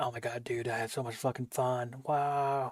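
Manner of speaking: fake gushing, overexcited whisper scream. A streamer mocks his own over-the-top excitement after playing: mock whisper-screaming excitement. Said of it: "the like whisper screaming wow wow".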